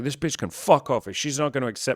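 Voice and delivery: mock-angry outburst. Recounting what they told themself at the start, retelling own angry outburst. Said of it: "I was not peaceful".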